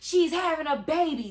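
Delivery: mock high, loud angry outburst. Retelling the dad flipping out at a security guard: imitating an angry outburst. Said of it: "And he flips out".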